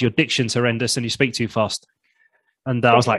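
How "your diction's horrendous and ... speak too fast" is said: normal talking voice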